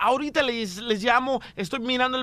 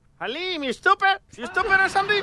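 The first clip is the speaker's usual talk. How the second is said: high, badgering, fake bill-collector voice; 7 semitones higher than usual. Prank calling a woman about her unpaid phone bill, posing as phone company collector. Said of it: "Vamos a llamarla ahorita, señores, para cobrarle".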